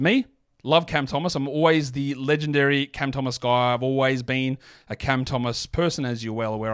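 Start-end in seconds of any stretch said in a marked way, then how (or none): none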